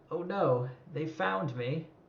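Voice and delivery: soft, hushed library-lady voice. Narrating a story, voicing the library lady when she is found: library lady voice. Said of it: "the library lady is just like".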